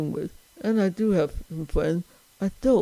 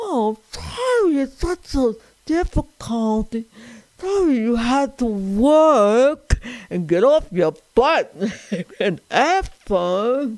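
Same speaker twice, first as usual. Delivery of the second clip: high, snarky put-on Italian voice, drawing out "work"; 7 semitones higher, 4 dB louder than usual. Retelling his reply to a man who complained he was tough, in a mock-snarky Italian voice. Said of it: "acted like a snarky Italian and said".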